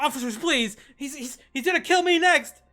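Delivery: shrill, very high, very loud, frightened, cowering pleading. Voicing a character who cowers before the officers: cowering plea.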